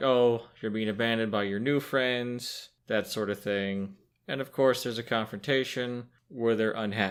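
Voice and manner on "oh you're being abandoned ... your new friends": ordinary talk, nothing marked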